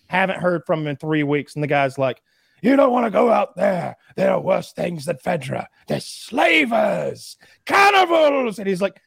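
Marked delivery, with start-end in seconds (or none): 2.6-8.6 high, rough, widely swooping, with slavers stretched out. Retelling a TV character's warning about going out: sounding like Doc Brown. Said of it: "You sound like the Doc from Back to the Future".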